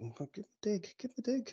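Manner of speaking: muttering. A game master voices a man's mates behind him, mumbling. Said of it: "his mates are kind of mumbling behind him".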